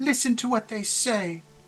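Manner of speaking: very high-pitched, feminine-sounding voice. Narrator voicing a character who speaks unexpectedly, high feminine voice. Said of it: "a very kind of high feminine voice goes".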